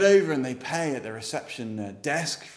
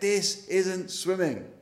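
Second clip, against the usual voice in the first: put-on acted, angry little boy's screaming tantrum cry; 4 semitones higher than usual. Retelling a story of an angry little boy at a pool: imitating a boy screaming. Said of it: "he's just like screaming and screaming".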